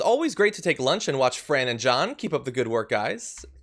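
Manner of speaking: normal talking voice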